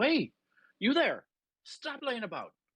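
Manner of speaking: put-on West Country accent. In a role-play, a character calls out to a machine man lying on the ground, West Country accent. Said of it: "Are we trying to go for a West Country accent?".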